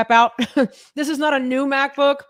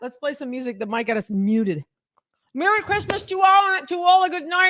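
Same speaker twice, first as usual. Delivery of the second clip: speaking while chewing, words muffled by full mouth; 4 semitones higher than usual. Speaking while eating, signing off with a line: talking with mouth full. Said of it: "you and your full mouth".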